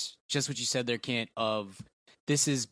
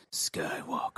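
movie trailer-style reading, deep low finish; 9 semitones lower, 5 dB quieter than usual. Saying the movie title the way the trailer did: imitating Kit, deep voice on the end. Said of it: "you have to say it just like Kit did".

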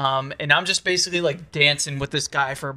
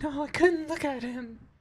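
put-on girly voice, much higher, quieter; 11 semitones higher, 6 dB quieter than usual. Retelling what friends replied during a walk, girl impression. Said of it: "Excellent girl impression".

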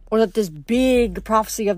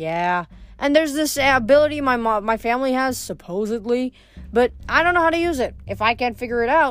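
ordinary delivery, nothing marked

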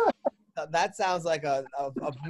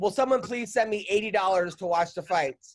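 usual speaking voice

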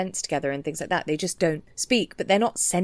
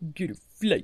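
put-on droll cartoon dog voice. Recalling the other speaker's Margaret voice: Droopy voice. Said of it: "you sound like Droopy".

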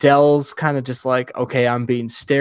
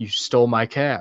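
cold, frosty, icy, chilly tone; 3 dB quieter than usual. Retelling a movie scene where Neil accuses someone: imitating Neil coldly. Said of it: "and really coldly, uh, Neil goes like".

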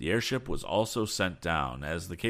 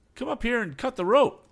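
very high, loud, gloating call; 5 dB louder than usual. Tom, leaning over and looking down, calls to those below: calling down. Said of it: "called Tom".

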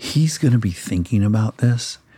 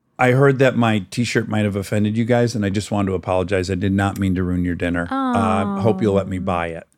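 usual speaking voice

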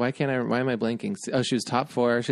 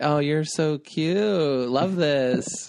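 speech broken by laughter; 3 semitones higher than usual. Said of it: "She's laughing and she was being really like".

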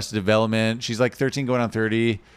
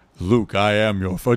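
very deep, slow, drawn-out voice. Suggesting a recasting, doing the line as James Earl Jones voice. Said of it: "just putting James Earl Jones in there".

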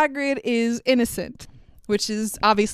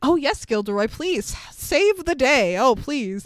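put-on unconvinced, disbelieving, skeptical pleading tone. Retelling how teachers answered a boastful colleague: imitating skeptical teachers. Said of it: "the teachers are all skeptically like".

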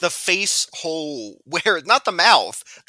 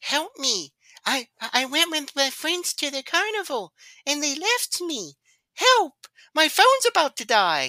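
pitched way up, stretched out; 10 semitones higher than usual. Retelling a film scene where a caller begs for help: imitating Jonathan's voice. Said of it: "Jonathan's voice in this is just so funny".

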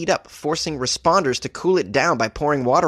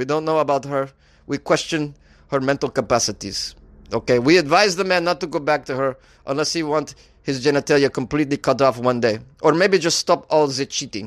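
passable put-on Ukrainian accent throughout. Speaker performs a loosely invented quote from a man, Ukrainian accent. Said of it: "I thought it was a pretty good Ukrainian accent".

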